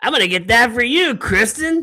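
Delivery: open, unabashed, play-acted carefree announcing. Retelling own words to a wife in Walmart: retelling saying it really loud. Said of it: "I said it really loud".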